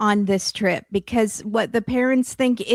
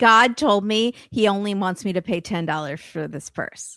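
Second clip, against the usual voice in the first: ordinary talk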